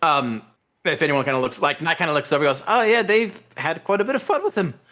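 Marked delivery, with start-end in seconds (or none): 2.7-4.7 sudden put-on Irish accent, pitched up. Game master voicing an onlooker outside, Irish accent. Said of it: "he went Irish there for some reason".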